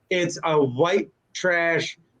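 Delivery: ordinary talk, nothing marked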